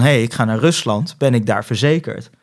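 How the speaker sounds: ordinary talk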